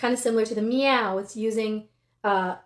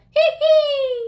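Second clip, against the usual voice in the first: very high, very loud, shrill, nasal witchy cackle; 8 dB louder than usual. Demonstrating nasal head voice for students, like a witch sound. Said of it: "like the witch sound".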